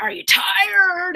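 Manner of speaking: put-on, high, barking drill-sergeant yell. Recounting a man kneeling down during a push-up contest, imitating a drill sergeant yell. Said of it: "yelling at me like a drill sergeant".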